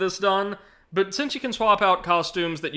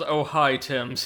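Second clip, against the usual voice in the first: put-on dreading voice, lower; 4 semitones lower than usual. Reading a game character's greeting aloud: imitating Maya's dreading voice. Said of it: "He says it in a dreading voice".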